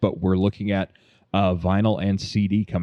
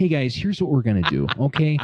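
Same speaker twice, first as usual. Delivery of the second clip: put-on midwestern voice, higher; 6 semitones higher than usual. Showing how a driven friend starts a writing meeting: imitating Jack. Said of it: "here's my impression of Jack".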